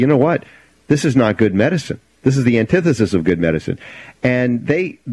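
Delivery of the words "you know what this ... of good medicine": usual speaking voice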